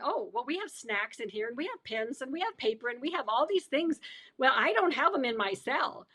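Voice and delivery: ordinary talk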